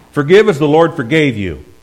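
forceful, stern, very loud and high voice. Showing how to read a scripture verse as a stern, forceful command. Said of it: "let's just put our foot down and stomp and say".

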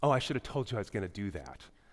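low-voiced, self-satisfied, knowing smugness. Speaker retells what a woman said after taking her from the speaker's arms: mimicking a smug remark. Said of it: "she very smugly turned and looked at me and goes".

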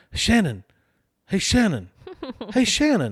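put-on very high, sing-song little kid voice, calling out. Retelling how a little kid called after them on the way to the bus, kid voice. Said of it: "I hear this kid voice going".

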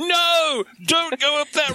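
acted, very high-pitched, drawn-out yelling cry. Retelling a companion's drive up a road, the speaker re-enacts yelling at the road. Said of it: "We're both yelling I'm yelling at the road".

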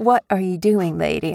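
ordinary talk

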